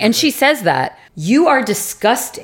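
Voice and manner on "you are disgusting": contempt dripping with venom, disgusted. Acting out a woman's reaction to a fart: imitating venomous disgust. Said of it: "With lots of venom in her voice".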